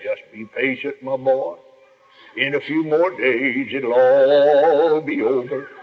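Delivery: put-on low, soothing, drawn-out professional preacher voice. Retelling what the only preacher who visited said to him: preacher's professional voice. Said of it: "put on his professional voice".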